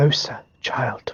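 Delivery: voiced stage whisper. Narrating the scene, the voice calls to Osa once more: whispering. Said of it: "the voice whispers once more".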